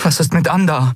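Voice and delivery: urgent, insistent voice. Endriel presses Kai for news of Andar after hearing of a death; urging. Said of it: "drängte Endriel".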